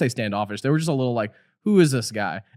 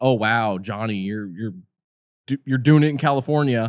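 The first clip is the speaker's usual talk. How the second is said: put-on judgmental voice; 3 semitones lower than usual. Retelling texts from friends about being in California, imitating a judgmental tone. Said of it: "really judgmental".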